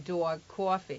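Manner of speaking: imitated New York accent. Recalling an actor from New York who kept saying these words, New York accent. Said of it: "he's from New York, and he kept saying".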